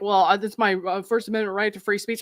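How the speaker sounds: ordinary delivery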